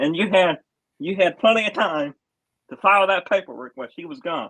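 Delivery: loud, frustrated scolding tone. Arguing with another speaker over a delay, frustrated and getting loud. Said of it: "I'm very frustrated with this right now because I'm getting loud".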